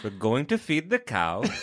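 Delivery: rough, attempted Welsh accent. Taking a turn at a welsh accent, attempted welsh accent. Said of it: "I could tell you were Welsh".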